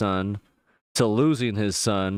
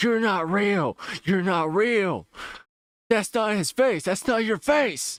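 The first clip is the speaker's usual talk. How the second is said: very high-pitched, tearful screaming sob; 10 semitones higher than usual. Recapping a scene where a man turns on the one calming him, imitating screaming and crying. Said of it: "he's just screaming and, you know, starts crying like".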